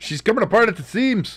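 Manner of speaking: clumsy put-on Scottish accent, very high. Joking while watching football, answering a call to focus: bad Scottish accent. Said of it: "I'm bad at a Scottish accent".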